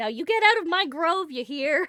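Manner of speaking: loud, high-pitched hollering, voice flung outward. Being pulled through a door by gloved hands, the character yells. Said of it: "I'm gonna yell".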